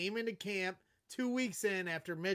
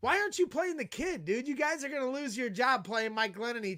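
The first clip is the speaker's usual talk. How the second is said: put-on yell, higher; 5 semitones higher, 4 dB louder than usual. Retelling what was said to a coach in the tunnel: retelling own yelling. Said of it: "You were yelling that to Dowell Loggins".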